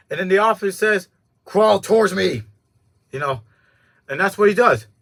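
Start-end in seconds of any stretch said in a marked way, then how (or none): none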